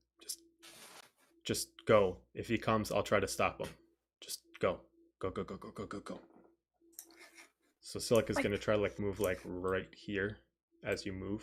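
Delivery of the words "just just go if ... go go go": hushed, pressing, urgent half-whisper. Voicing a character who tells the group to go: half-whispering urgently. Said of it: "Silik's just gonna whisper to the group".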